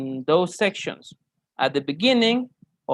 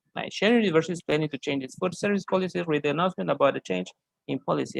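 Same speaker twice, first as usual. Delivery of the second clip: fast, soft, rattled-off reading aloud; 4 dB quieter than usual. Showing how some people read an announcement prompt, reading really fast. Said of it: "can read really fast".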